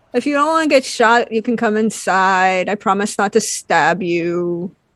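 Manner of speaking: ordinary talk, nothing marked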